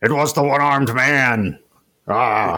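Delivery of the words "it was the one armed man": put-on gruff actor voice, pitched higher. Mocking a sequel where the dad shows up: Harrison Ford impression. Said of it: "That's my Harrison Ford, uh, impersonation".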